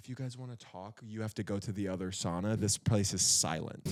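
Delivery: play-acted soft, nice-but-pointed, passive-aggressive tone. Retelling a woman scolding whisperers in the sauna: imitating a passive-aggressive mom tone. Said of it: "very nicely, but very, like, mom, passive aggressive".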